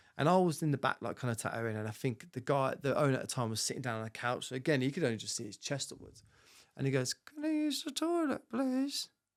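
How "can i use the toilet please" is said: thin, squeaky, very high, slow voice. Retelling a man asking the tattoo shop owner for the toilet, in a squeaky voice. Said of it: "he had this really squeaky voice".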